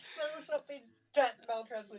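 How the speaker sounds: high, fast speech through laughing.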